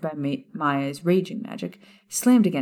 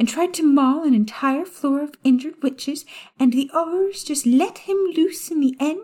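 very high, sugary, syrupy sweet voice; 11 semitones higher, 4 dB louder than usual. Reading a story aloud, voicing the witch in the doorway: high, sugary Umbridge voice. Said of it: "a variety of pink shades in the form of a short toad-like witch who stood unassumingly in [name]'s doorway with a stack ... A high-pitched, sugary voice interrupted [name]'s thoughts".

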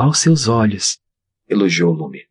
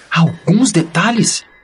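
high-pitched, loud shouted outburst; 9 semitones higher than usual. Lume answers her brother about the dwarves' omitted details, shouted. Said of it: "Gritou Lume".

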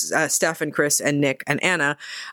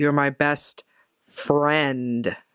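put-on pointed, emphatic tone. Retelling a movie scene where a character rejects a friend: imitating someone speaking pointedly. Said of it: "she says very pointedly".

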